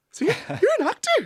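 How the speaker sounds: voice jumping up an octave, very high and stammering. Retelling meeting an actor at a house party, voice jumping up an octave. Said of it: "my voice went up an octave".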